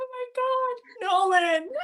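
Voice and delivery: acted distressed screaming. Speaker retells waiting for Adam to rush in and save her, retelling a scream. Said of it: "I'm screaming. I'm like".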